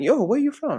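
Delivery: play-acted, very high, high-pitched shouting. Retelling how a stranger walks up asking origin: imitating someone shouting. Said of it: "you start shouting".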